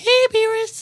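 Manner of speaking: squeaked out, way up high. Describing a little fish character, the speaker does the Oracle Fish high voice. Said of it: "he had a really high voice like".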